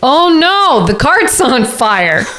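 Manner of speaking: loud, high-pitched shout. A player's character leans against the cart's only exit and starts yelling. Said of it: "I'm gonna start yelling".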